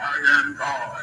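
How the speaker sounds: put-on very deep, hushed, soft old man's voice. Demonstrating how movies give God a voice, an older man's voice. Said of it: "older man. With a voice like this".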